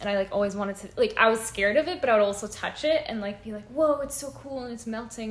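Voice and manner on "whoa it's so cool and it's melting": ordinary talk, nothing marked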